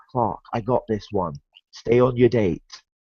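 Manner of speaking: quiet, hushed half-whisper. Retelling a joke where Wonder Woman half-whispers to Superman: Wonder Woman half-whispering. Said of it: "very quietly hears Wonder Woman whispering".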